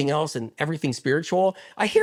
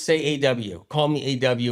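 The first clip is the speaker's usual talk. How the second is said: plain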